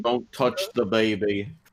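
put-on northern English accent. Recapping last season's plot and quoting a line: horrible northern English accent. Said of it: "horrible northern accent".

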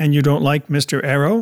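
ordinary delivery

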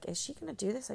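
put-on whisper. Retelling a film scene where managers whisper in the background: imitating a whisper. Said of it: "whispering in the background".

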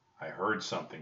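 ordinary delivery

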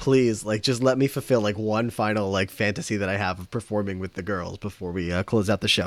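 ordinary delivery

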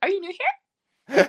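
put-on very high, very loud squeal in an American accent. Repeating a meme line to a girl at school: high-pitched american accent. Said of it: "it goes like in this American accent, it's really high-pitched voice".

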